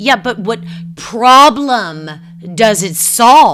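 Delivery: mock, very loud, high, insistent, demanding tone. Recounting being interrupted again by him, retelling his demanding interruption. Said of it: "interrupts me again and demands".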